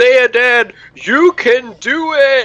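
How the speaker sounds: loud, high shout, very slow and drawn out. Cheering on a party member sinking into the lake: yelling really loudly. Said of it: "I'm gonna yell really loudly".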